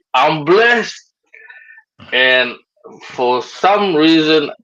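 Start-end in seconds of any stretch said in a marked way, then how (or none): 0.1-1.0 put-on shouting, called out only mildly. Retelling what a man walking past shouted: imitating someone shouting. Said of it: "And he shouted".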